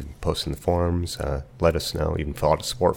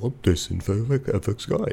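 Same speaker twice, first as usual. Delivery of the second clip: silly put-on dog voice, high and slow; 6 semitones higher than usual. Speaker voicing a hypothetical remark mid-explanation: dog voice. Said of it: "So that's my dog voice".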